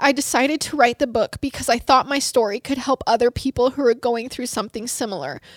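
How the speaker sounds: plain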